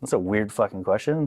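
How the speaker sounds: ordinary delivery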